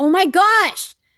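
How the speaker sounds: mock, piercing, shrill, high, full-volume exasperated yell. Retelling being annoyed at someone walking beside the car: retelling own yell. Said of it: "I yelled at him".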